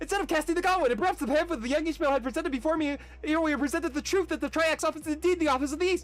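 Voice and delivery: fast, breathless rattled-off reading. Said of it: "attempt to read this at full speed".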